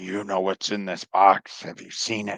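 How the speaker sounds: sidelong muttered aside, under the breath. Voicing a character passing the chimp who greeted them: said under the breath. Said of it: "I'm gonna say under my breath".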